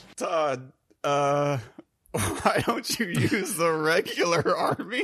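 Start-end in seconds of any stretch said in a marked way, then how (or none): 2.1-5.1 slow, laughing all the way through. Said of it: "Why are you laughing, [name]?".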